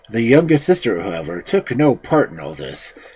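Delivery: plain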